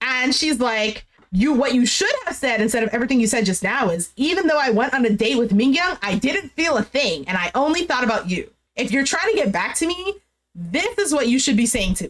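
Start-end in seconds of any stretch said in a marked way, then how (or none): none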